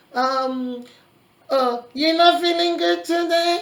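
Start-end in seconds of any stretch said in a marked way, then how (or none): 1.9-3.6 loud, high, mocking sarcastic tone. Showing how an abusive partner talks to someone: sarcastic tone. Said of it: "sarcastic tone to talk to the person".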